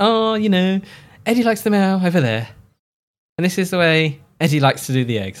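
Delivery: smug know-it-all tone. Imitating Chandler before playing a clip: smug Chandler impression. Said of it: "It's weirdly smug".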